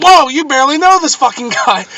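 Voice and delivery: put-on sudden, sharp, loud, high snapping outburst. Retelling listening in on a phone line, retelling snapping at someone. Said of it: "And I snapped".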